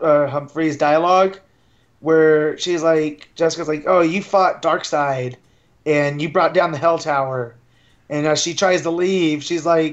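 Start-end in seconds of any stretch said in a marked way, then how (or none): none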